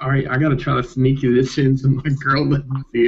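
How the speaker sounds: ordinary talk, nothing marked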